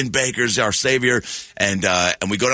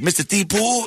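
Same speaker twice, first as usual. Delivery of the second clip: put-on very high-pitched small little-kid voice; 10 semitones higher than usual. Retelling greeting a famous tv guy as a kid: little kid from the projects. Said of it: "I talk like a little kid from the projects".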